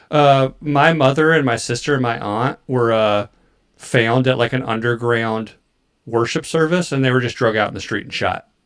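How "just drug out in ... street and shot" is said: normal talking voice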